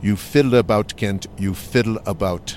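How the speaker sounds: put-on Canadian accent with British tones. Quoting what a man told him, attempting the man's British-Canadian accent. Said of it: "I won't do his British-Canadian accent very well".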